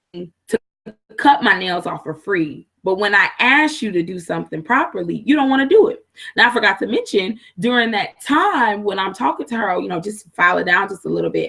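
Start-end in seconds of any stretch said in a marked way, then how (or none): none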